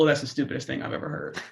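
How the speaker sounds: flat, unbothered delivery. Retelling what she said to the speaker in the hallway: monotone voice. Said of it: "monotone voice".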